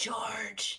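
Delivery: called out in a stage whisper. Calling out for george in a cave: whispering a name. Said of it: "I'll sort of whisper out".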